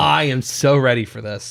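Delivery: ordinary delivery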